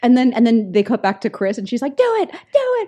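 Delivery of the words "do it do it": put-on frenzied delivery, much higher pitch. Recounting a film scene, the speaker acts out Chris; imitating Chris in a frenzy. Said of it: "she's like whipping herself into this furor".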